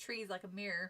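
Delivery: ordinary delivery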